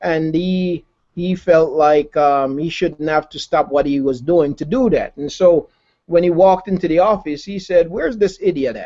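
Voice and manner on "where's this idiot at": put-on spiteful, poisonous, venomous tone. Retelling what a coworker said on walking into the office: imitating a venomous tone. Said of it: "he said it in a real venomous way".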